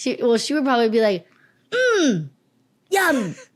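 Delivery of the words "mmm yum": put-on high, sing-song toddler voice with savoring sound. Telling someone about a two-year-old niece who loves croissants, imitating a toddler. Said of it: "That's my impression of".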